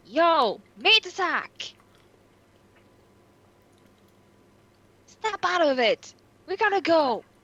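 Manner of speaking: drawn-out, high-pitched, in-character hollering yell. Playing a tabletop game, urging a companion to leave: yelling in character. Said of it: "I'm going to yell".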